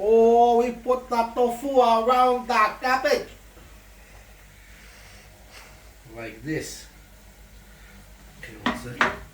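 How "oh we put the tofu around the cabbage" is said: slow, high, put-on Chinese accent in English. Placing tofu while cooking, asked to say it again, in a chinese accent. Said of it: "Can you say this with a Chinese accent?".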